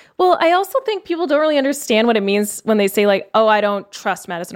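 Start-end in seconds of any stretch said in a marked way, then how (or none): none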